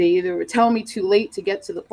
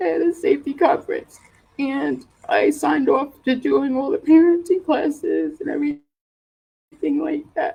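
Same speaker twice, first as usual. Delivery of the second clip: high, choked-up voice, fighting through tears. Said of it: "I'm choking up a little bit".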